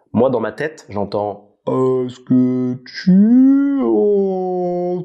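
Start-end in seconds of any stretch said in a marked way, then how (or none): 1.6-5.0 extremely slow, "tu" stretched long, pitch raised. Showing how a slowed-down voice sounds in one's head, drawn out very slowly. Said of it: "J'entends vraiment ça, hein. C'est lent de ouf".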